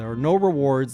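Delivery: ordinary talk, nothing marked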